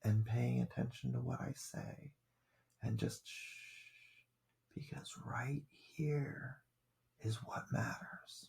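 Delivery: very soft voice. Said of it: "I get really soft".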